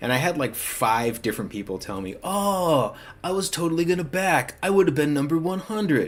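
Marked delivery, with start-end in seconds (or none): 2.2-6.1 deliberately put-on douchey tone, pitched up. Retelling what backers told them, in a douchey voice. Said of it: "I said that in my douchey voice".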